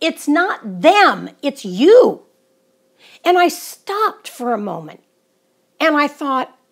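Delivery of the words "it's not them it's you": put-on fed-up exasperation, loud and drawn-out. Recalling what someone said to them when nothing made sense, retelling an exasperated remark. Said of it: "in an exasperated tone of voice".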